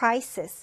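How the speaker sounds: crisis said with the first syllable hit hard.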